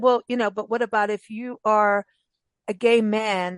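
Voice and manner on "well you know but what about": ordinary delivery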